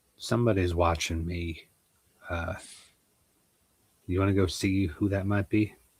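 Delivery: whispering. Playing a character in a game, whispering to a companion: whispering to Maurice. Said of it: "whisper to Maurice".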